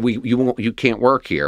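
plain

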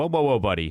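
normal talking voice

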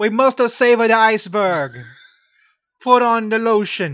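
put-on Italian accent. Joking about Italians covering a glacier with sunscreen: put-on Italian accent. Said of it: "That is Italian".

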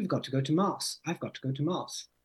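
put-on British Jamaican accent. Retelling how a friend talked about going to mass: imitating a british jamaican accent. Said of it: "he's British Jamaican, so he's got this really funny accent".

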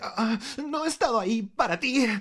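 put-on anime character voice, very high. Asked whether it was with that voice, repeating the line in an anime voice. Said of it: "con voz de anime".

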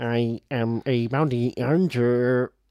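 robot bounty hunter voice. Repeating the tagline after the other speaker asks for it, Star Wars robot bounty hunter voice. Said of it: "like the robot bounty hunter in Star Wars".

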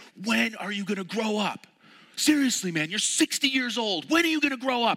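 yelled, pitched very high. Retelling a passenger yelling at the laughing driver: imitating someone yelling. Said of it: "and he yells".

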